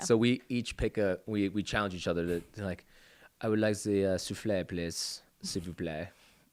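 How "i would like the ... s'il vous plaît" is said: poor, put-on French accent. Describing ordering dessert at restaurants in accents, bad French accent. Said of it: "That was actually not a good French accent".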